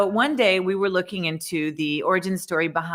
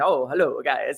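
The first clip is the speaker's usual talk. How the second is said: put-on strong Italian accent, laid on thick; 3 semitones lower than usual. Speaker retelling how the landlord greeted the young game makers, Mario's strong Italian accent. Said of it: "this really strong Italian accent".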